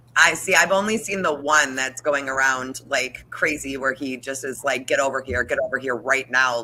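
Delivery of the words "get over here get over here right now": put-on demanding tone. Retelling what someone says in a video: imitating a demanding tone. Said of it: "like, demanding".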